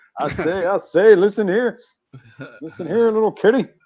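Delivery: loud, crowing cartoon rooster voice. Picking which Looney Tune to be, doing a Foghorn Leghorn voice. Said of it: "Either Foghorn Leghorn".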